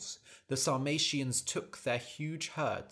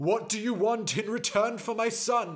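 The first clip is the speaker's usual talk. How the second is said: raised, pitched-up, demanding shout; 8 semitones higher, 7 dB louder than usual. Reading a story, the king answers the one who took his son, shouting. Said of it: "shouted the king".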